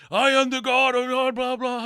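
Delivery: shrill, very high, loud screaming.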